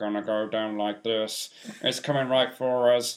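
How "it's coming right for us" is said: mock electronic voice-box voice. Joking about a man with throat cancer, in a South Park guy voice. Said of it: "He'll talk like that guy from South Park".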